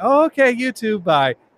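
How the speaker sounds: cheerful, chirpy delivery.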